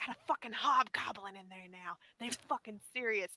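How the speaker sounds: hushed whispered voice. A player's character moving to the wall, whispering to the rest of the party. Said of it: "I'll whisper to everyone".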